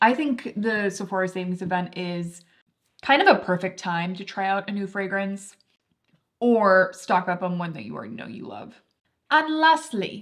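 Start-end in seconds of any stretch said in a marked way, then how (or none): 9.3-10.2 put-on English accent, pitched up. Wrapping up a fragrance segment after filming for so long, in an English accent. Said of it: "why do I keep doing an English accent?".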